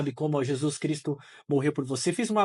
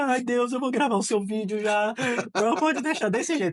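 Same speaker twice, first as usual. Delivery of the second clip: high, tearful, weeping voice, crying; 8 semitones higher than usual. Recalling falling to the floor before recording a video, retelling a crying prayer. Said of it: "comecei a chorar".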